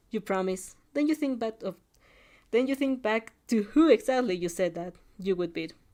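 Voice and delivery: ordinary delivery, nothing marked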